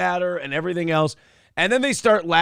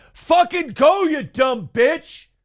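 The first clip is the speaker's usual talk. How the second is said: mock furious outburst, very high-pitched, drawn-out yell; 10 semitones higher, 4 dB louder than usual. Retelling road rage at a stopped driver, imitating his own yell. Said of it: "And I just yelled".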